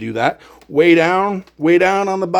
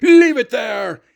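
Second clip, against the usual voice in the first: mock shopkeeper's mild yell, pitched up; 6 semitones higher than usual. Retelling a store clerk who yells from behind the counter: imitating a clerk yelling. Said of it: "He's yelling at me".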